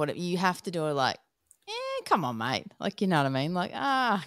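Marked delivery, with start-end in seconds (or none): 1.7-2.7 cheeky, playful, joking, pitched-up tone. Showing how to haggle for a discount: cheeky joking haggling tone. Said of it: "in a cheeky manner".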